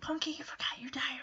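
soft, breathy, barely voiced whisper. Recapping a show scene, the speaker acts out Henry whispering to Punky. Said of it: "Henry kind of whispers".

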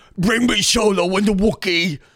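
very high slug-alien voice, pitched way up. Imagining Mitch McConnell in the senate: Mitch McConnell as a slug alien. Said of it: "That's what I'm imagining with that voice".

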